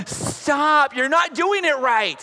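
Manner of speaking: fed-up, exasperated, full-voiced, high outburst. Retelling a daughter's exasperated correction of the adults: imitating daughter in full voice. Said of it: "she's in full voice".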